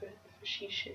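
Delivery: very soft, hushed whisper on a word.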